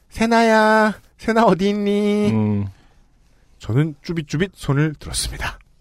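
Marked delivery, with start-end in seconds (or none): 0.2-2.3 sweet, cute, high cutesy voice. Narrating how the nurse calls out for the speaker's baby, in a cute voice. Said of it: "간호사 선생님이 귀여운 목소리로 부르시더라고요".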